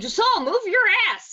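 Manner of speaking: shrill, very high, loud yell. Playing a tabletop game, the speaker's character yells at a fellow character to move. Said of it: "And then I'm yelling".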